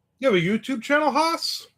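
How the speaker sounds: strikingly very high-pitched voice. Asking Haas whether he has a YouTube channel, in a high-pitched voice. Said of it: "such a high voice".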